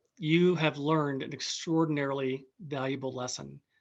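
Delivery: ordinary delivery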